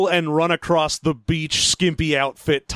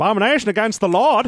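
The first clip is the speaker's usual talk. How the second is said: acted voice, raised pitch; 5 semitones higher than usual. Doing a character voice that keeps slipping into a Maine accent. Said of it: "The more I do that voice, the more it's slipping towards, like, being a main person".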